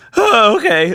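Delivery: squeaked out, voice cracking. Retelling a game character's reply: Squeaky Voice Teen voice. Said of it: "like the Fry Cook from fucking The Simpsons".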